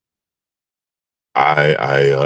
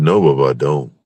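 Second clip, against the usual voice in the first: ordinary talk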